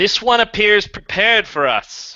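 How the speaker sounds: thundering divine voice. Narrating a scene, voicing a light that speaks to the player, in a booming voice. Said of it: "A voice booms out from the booming light".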